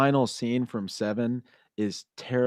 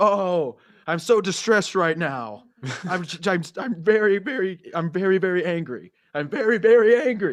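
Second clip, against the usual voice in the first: play-acted, exaggerated, hammy, loud, drawn-out over-the-top acting; 8 semitones higher, 5 dB louder than usual. Speaker tells friends how a man might as well have stated his feelings, mocking over-the-top acting. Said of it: "that's how over the top it was".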